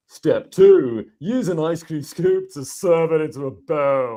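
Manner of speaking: silly high put-on voice. Recording a voiceover of a numbered step, in a really funny voice. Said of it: "choose a really funny voice".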